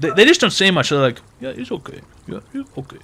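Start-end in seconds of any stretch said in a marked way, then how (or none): 1.4-3.0 put-on Indian accent, terse, hushed, near whisper. Describing how an old doctor character should sound, demonstrating a terse indian accent. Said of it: "I want him to have an Indian accent".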